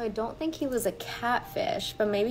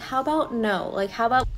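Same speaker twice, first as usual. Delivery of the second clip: ordinary delivery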